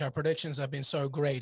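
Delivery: dry, tongue-in-cheek sarcastic tone. Putting another speaker on the spot before a prediction: sarcastic. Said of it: "he says sarcastically".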